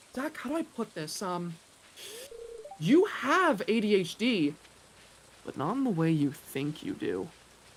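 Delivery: dark, grave, foreboding voice. Retelling how a woman on the phone gave a diagnosis: imitating an ominous tone. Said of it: "in such an ominous manner".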